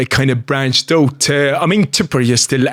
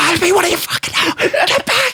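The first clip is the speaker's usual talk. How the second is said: very high-pitched, ballistic, furious ranting. Retelling how the coach reacted mid-game: imitating a coach going ballistic. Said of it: "my coach is going, like, ballistic".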